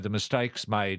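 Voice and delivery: ordinary delivery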